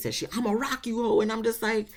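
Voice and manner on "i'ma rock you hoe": mock hoarse, raspy screaming. Retelling a fight where security got involved: imitating Erica Dixon screaming raspy. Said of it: "screaming to the point her, her voice is getting raspy".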